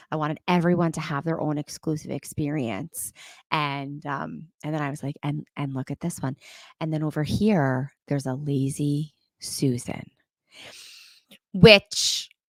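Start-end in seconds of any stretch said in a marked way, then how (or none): 5.2-10.1 hushed voice, lower and quieter. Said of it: "It was very quiet".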